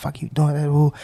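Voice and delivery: mock yelling. Recounting yelling at bystanders who filmed a crash, retelling yelling at people. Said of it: "I'm yelling at people".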